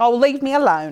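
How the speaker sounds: put-on Cockney accent. Imitating a game character after falling off a bridge: cockney accent. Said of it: "She's Cockney".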